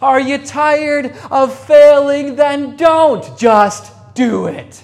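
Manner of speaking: booming, very loud, high motivational pep-talk shout. Speaker reads words from a motivational video, imitating a shouted motivational speech. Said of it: "I'm going to try and say it like he did".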